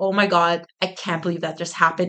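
normal talking voice

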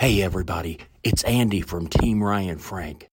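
hushed whisper. Greeting everybody for a team video because he has a secret, whispering. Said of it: "Why am I whispering".

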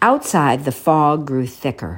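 ordinary delivery, nothing marked

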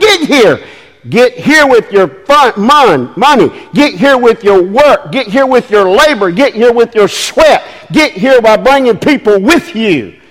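mock shouting. A speaker voices the Lord's call to the listeners, imitating a shout. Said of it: "He's shouting".

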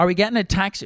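put-on horribly pitched, very high, loud South Dublin accent. Retelling a woman outside looking for a taxi, speaker mimics her horribly pitched south dublin accent. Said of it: "she goes in a horribly pitched South Dublin accent".

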